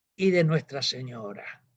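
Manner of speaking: quiet, low, soft words under the breath. Retelling what the Pope added quietly during the conversation, retelling a quiet voice. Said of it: "dice en voz baja".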